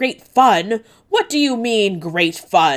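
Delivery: furious, angry roar. Reading a story aloud, voicing a king hearing troubling news: roaring angrily. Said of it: "roars Orf".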